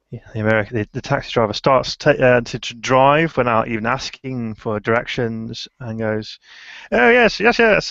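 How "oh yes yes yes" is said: over-the-top, ridiculous, very high fake British accent. An American taxi driver picks up Edwin, in a ridiculous fake British accent. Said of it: "starts putting on the most ridiculous imitation British accent".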